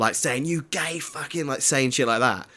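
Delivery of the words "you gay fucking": put-on higher drunk shout, slurred. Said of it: "she was shouting at them".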